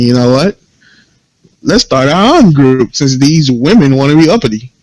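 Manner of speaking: plain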